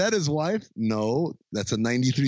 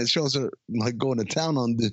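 plain

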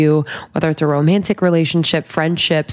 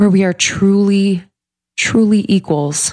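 pushing through, holding back tears; 4 semitones higher than usual. Speaking alone in a studio, holding back tears. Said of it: "not crying".

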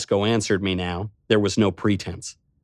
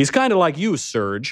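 blunt, brutal, pitched-up delivery; 7 semitones higher than usual. The narrator speaks to Serge and compares him to someone, said brutally. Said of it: "I said brutally".

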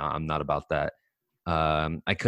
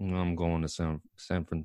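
lazy put-on athlete drawl; 4 dB quieter than usual. Retrying an impression of a football player: lazy Bosa impression. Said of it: "He's so lazy. How do you talk like that?".

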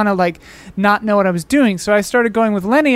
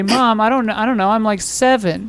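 usual speaking voice

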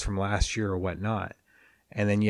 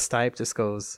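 plain

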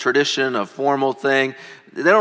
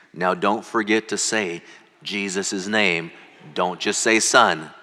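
hushed voice, close and soft, like an aside; 6 semitones lower, 5 dB quieter than usual. Retelling a church member's reminder before a baptism: imitating a half-whisper. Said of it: "whispers in my ear".

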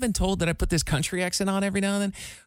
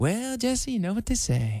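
put-on old-movie style Southern belle accent; 4 semitones higher than usual. Imitating a co-host's recurring bit, addressing Jesse: Southern belle accent. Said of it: "you have like this Southern belle".

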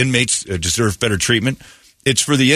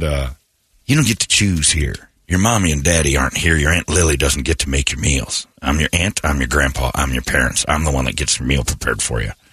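put-on dramatic tough guy voice, lower; 7 semitones lower than usual. Retelling what a man said to a new inmate, acting out his lines as an imitating a movie tough guy. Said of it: "he turned movie guy".

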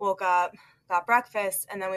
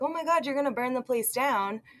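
play-acted, jokey exclamation through full laughter; 5 semitones higher than usual. Retelling what you jokingly said when flames set off his smoke alarm, retelling a laughing joke. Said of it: "Like fully laughing when I said it".

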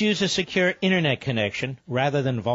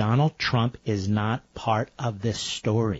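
slow, deliberate, spelled-out pacing with patronizing condescension; 4 semitones lower than usual. Correcting a caller on the phone: speaking slowly. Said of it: "I will speak slowly so even you can understand".

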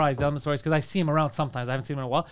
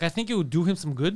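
ordinary talk, nothing marked

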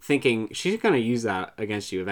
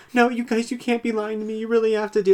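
very high, near-hysterical crying, sobbing and pleading; 11 semitones higher than usual. Retelling a contestant's plea after a live show: imitating Keisha crying in hysterics. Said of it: "crying, like, in, like, almost in hysterics and just being like".

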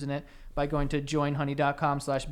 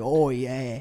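put-on Cockney accent, louder; 2 semitones lower, 4 dB louder than usual. Retelling how a woman in a video talked: imitating a cockney accent. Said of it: "but she had an accent".

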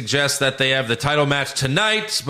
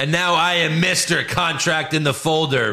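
ordinary talk

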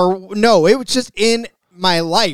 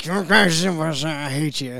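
put-on soft old grandpa voice, drawn-out I; 3 semitones lower, 6 dB quieter than usual. Acting out what grandpa says, grandpa impression. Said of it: "grandma and grandpa impressions by [name]".

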